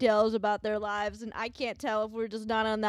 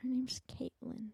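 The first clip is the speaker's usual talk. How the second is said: breathy whisper, barely any voice; 3 semitones higher, 12 dB quieter than usual. Repeating a name to the other speaker, whispering into the microphone. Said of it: "Can you please stop whispering into the".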